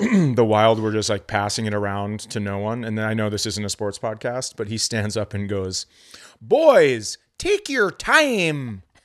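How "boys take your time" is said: very high, very slow, sing-song Minnesota drawl. Retelling a man who stands up at the game and calls out, minnesota accent. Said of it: "who is convinced he doesn't have a Minnesota accent".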